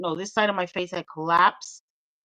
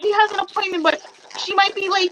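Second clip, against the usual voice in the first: pumped-up, excited rambling. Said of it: "she was, like, so pumped".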